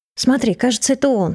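ordinary delivery

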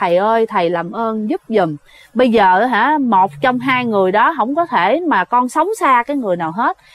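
plain

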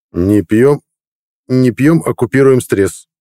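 proud, slow delivery. A man answers a woman's reproachful question, replying proudly. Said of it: "гордо ответил Гарик".

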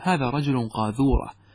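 ordinary talk

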